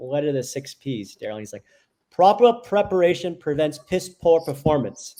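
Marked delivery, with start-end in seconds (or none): 2.1-5.2 put-on belted out loud in a posh English accent. Recalling sports photography advice about the six P's, imitating Daryl in Windsor English voice. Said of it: "In a very Windsor English voice".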